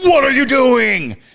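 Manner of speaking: piercing, startling, shrill and very loud shout. Retelling a ghost story where a voice shouts at someone dripping paint: imitating a loud shout. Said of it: "louder than anything, just shouts out".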